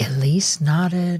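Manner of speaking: ordinary delivery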